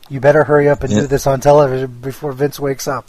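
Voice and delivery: ordinary talk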